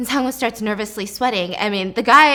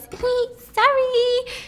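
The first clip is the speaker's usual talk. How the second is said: very high, sugary, cutesy voice; 13 semitones higher than usual. Retelling a webtoon scene, the girl apologizing: imitating a cute apology. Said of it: "trying to be cute and goes".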